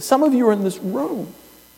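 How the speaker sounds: very high, tearful, choked-up voice. A chaplain speaking to a room, admitting emotion as he talks: tearing up. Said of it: "I'm tearing up right now as I say this".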